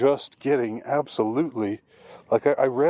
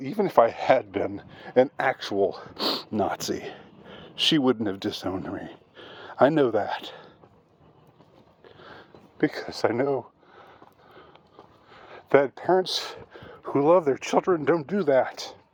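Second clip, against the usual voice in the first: voice catching with emotion, choked up. Speaker shares something personal about a parent's love; choked up. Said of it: "I'm sorry for getting choked up".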